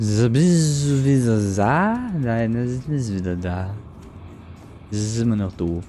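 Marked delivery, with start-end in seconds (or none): 0.0-3.7 put-on slow French accent. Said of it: "Wer ist denn jetzt wieder im französischen Akzent".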